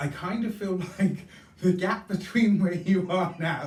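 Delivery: talking through laughter. A card reader talking to Taurus viewers about the World card, laughing while speaking. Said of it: "sorry, I'm laughing".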